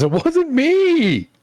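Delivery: very high, very loud, frantic, panicked shriek. Game master voicing a bullywog on the ramp, panicked bullywog voice. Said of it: "panicked bullywog on the ramp says".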